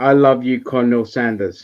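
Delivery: normal talking voice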